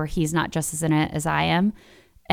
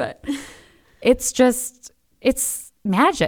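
crying through the words, tearful, very slow; 7 semitones higher than usual. Speaker apologizing to the listener mid-conversation, crying while speaking. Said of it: "I'm sorry, I'm crying".

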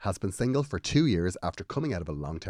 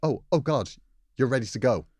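imitated nervous stutter, mock stammering; 4 semitones higher than usual. Retelling a surprised man meeting her on the driveway, imitating a nervous stutter. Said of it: "said in a nervous voice and stuttered".

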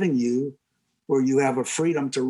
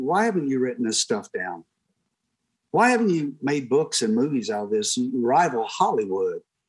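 ordinary talk

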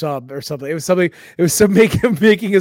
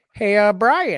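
raised, strained voice pushed up past its range; 5 semitones higher than usual. Answering a request for an impression: Peter Griffin voice. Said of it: "Peter Griffin".

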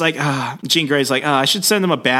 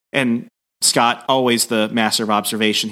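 ordinary talk

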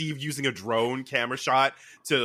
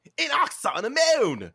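put-on Australian accent, higher pitch; 13 semitones higher, 3 dB louder than usual. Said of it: "the Australian accent for the".

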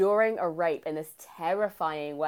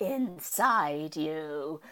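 put-on terrifying voice; 4 dB quieter than usual. Retelling a movie scene where Dren speaks to Elsa, in a terrifying Dren voice. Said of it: "Male Dren in this terrifying voice is like".

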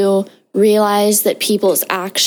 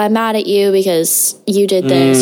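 plain

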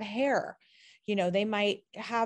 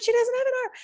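put-on child screaming, higher, louder; 7 dB louder than usual. Retelling a moment at a grocery store: imitating a child screaming. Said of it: "They're screaming".

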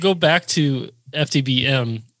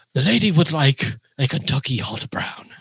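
put-on nature documentary narrator voice. Ordering a dish for someone else: Attenborough voice. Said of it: "I will order in my Attenborough voice".

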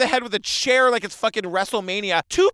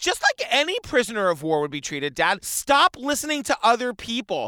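ordinary delivery

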